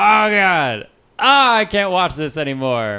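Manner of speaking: mock exasperated groan, high and loud.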